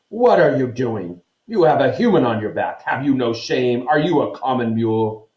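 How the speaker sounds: fierce, heated, angry scolding tone. Reading a centaur's angry challenge to another centaur: thundering angrily. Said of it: "Bane thundered".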